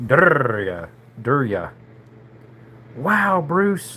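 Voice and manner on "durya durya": put-on Mexican accent, exaggerated rolled r. Saying the name of the thing he wants, rolling the R like a Mexicano. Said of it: "got that roll in the R like a Mexicano".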